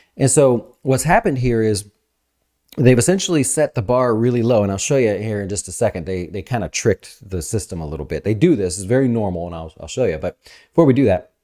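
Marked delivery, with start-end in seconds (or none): 10.2-11.2 fast, excited, rushed talk. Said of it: "I'm talking fast and stuff".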